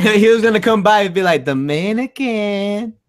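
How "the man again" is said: light-voiced, easy, relaxed delivery. Joking about a friend coming by, imitating Frenzy's light voice. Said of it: "Frenzy has a really light voice".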